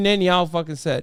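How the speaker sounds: ordinary delivery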